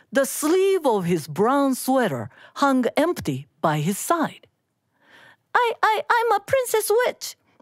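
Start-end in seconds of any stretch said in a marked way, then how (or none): 5.5-7.3 squeaky little voice, pitched very high. One of the kids answers the old man at his door, soft and squeaky. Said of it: "Megan's voice was soft and squeaky".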